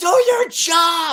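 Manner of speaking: all-out scream, very high and loud. Retelling how the speaker screamed at their daughter over homework: retelling own scream. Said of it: "I screamed at her".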